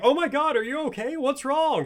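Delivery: very high, loud yell. Retelling Cozy's reaction from the living room to her screaming, imitating Cozy yelling. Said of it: "She's yelling from the living room".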